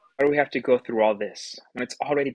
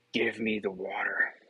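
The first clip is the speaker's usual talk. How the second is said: mocking, growling wizard voice; 3 semitones lower, 6 dB quieter than usual. Narrating a character who reluctantly gives in to a woman's demand, mocking growly wizard impression. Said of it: "in a mocking impression of some kind of growly wizard".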